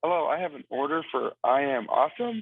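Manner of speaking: normal talking voice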